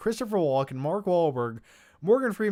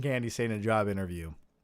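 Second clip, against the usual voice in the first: ordinary talk, nothing marked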